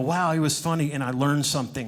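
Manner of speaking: normal talking voice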